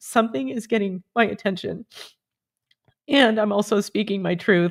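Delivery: tearful voice, crying while speaking. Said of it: "I know I'm crying for a reason".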